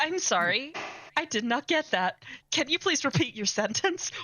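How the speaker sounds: mock voice-assistant style smart-speaker voice. Joking that a desk gadget is a spy, then answering as the device: imitating a voice assistant. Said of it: "It's a chaos spy".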